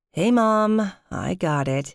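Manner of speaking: tired, worn-out, slow and weary. Ginny answers her mom on the phone, wearily. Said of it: "I responded wearily".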